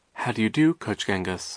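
plain reading voice

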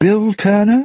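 very high, searching, calling out voice. Elizabeth, locked deep inside the ship, calls out for Bootstrap Bill, calling softly. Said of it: "she called softly".

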